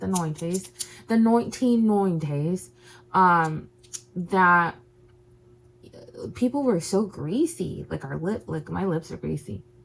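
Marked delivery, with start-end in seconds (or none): 0.0-2.7 British English accent. Speaker chatting to an audience repeats a phrase in an English accent. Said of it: "I always have to say it with an English accent".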